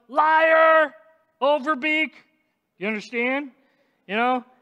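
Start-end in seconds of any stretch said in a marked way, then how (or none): 0.2-2.2 loud, high accusing shout, drawn-out "liar". Describing someone watching a person lie, imitating his accusing shout. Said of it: "I'm sure he just shouts out".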